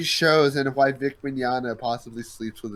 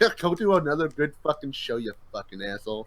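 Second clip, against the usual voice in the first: mocking, taunting tone with laughter. Imagining mocking a visitor in costume: laughing while mocking. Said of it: "I'll just laugh at him like".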